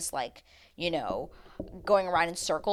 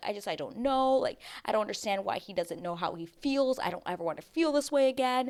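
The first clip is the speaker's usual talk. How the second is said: mock, tearful, talking through tears; 3 semitones higher than usual. Retelling a contestant crying on the couch to the other girls: imitating someone crying. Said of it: "crying and being like".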